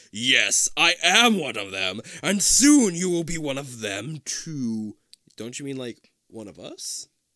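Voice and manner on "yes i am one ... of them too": slow, growling werewolf voice. Narrating a horror story as the werewolf man reaches for the listener, growling. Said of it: "as the man growls".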